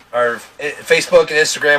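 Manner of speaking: stuttering. Reading out where the social media tags are, stuttering. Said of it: "Why am I stuttering so bad?".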